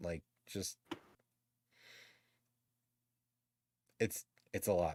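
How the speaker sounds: soft, choked-up voice on the verge of tears. Speaker trying to explain how they feel inside, choking up. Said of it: "let's end this shit before I break down".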